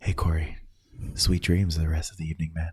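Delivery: ASMR-style voice. Saying goodnight to a friend who is falling asleep, in an ASMR-style voice. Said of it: "We should just talk like this".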